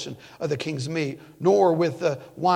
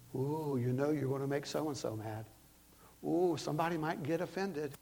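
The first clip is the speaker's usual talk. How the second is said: put-on hushed, half-whispered old devil voice; 13 dB quieter than usual. A preacher voicing the devil's half-whispers while preparing a sermon, devil half-whispering. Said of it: "the old devil whispers".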